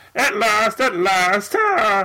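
high, drawn-out cartoonish voice. Repeating the joke after being asked about it: Marvin the Martian voice. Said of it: "Marvin the Martian".

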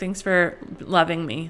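ordinary talk, nothing marked

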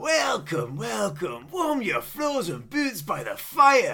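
bad, rough, sing-song put-on Scottish accent. Imitating a shopkeeper who hands you a drink in welcome, shit scottish accent. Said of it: "I'm allowed to do a shit Scottish accent".

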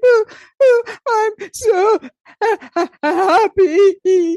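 acted, very high, very slow, teary sobbing. Retelling crying from overflowing joy: imitating own past crying. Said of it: "So I'd start to cry".

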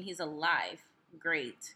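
sarcastic delivery. Talking about a young man shot and paralyzed, sarcastic. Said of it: "I say that so sarcastically".

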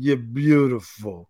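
put-on slow, slurred drunken delivery. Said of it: "he just drunkenly goes".

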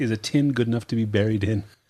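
ordinary delivery

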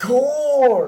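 loud yell of the word.

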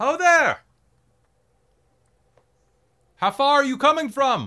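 loud high calling out. Game master as Duvessa hails the party approaching on the trail, calling out loudly. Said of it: "Duvessa raises her voice as you approach".

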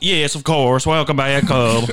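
bad put-on Southern American accent. Asked to keep doing it, answering in a southern accent. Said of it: "Can you keep doing the southern accent?".

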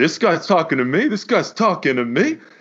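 put-on angry guy voice. Retelling a pickup game, the speaker quotes a shirtless guy, imitating an angry guy. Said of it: "is getting all pissed off".

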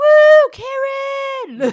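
high, shrill, very loud, drawn-out hype whoop. Retelling how a girl hyped herself up: imitating a girl yelling her own name. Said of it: "yells out her own name to".

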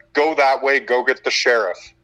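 usual speaking voice

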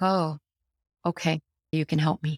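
ordinary delivery

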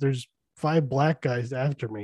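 ordinary talk

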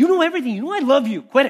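a little chippy and irritated. Retelling how they used to read Peter's reply: acting chippy. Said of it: "like Peter's a little chippy about it".

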